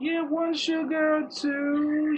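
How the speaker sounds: polite tinkling tiny voice. Showing a learner how the character asks about tea: polite tinkling tiny voice. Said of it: "kind of tiny voice".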